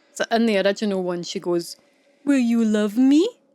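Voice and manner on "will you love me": rising tune at the end, up on me. Copying how she says a line in the original, pitch rising at the end. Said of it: "Her voice goes up. ... It sounds like that".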